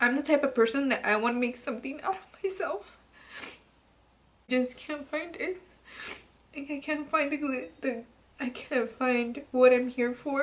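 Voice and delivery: crying while talking. Talking to viewers about unfulfilled goals, crying while talking. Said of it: "I'm so fucking ugly when I cry".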